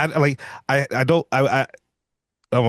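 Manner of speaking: stammering over words. A speaker discussing a horror film's lore trips over the words, stuttering. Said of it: "I'm stuttering right now".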